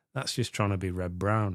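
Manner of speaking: usual speaking voice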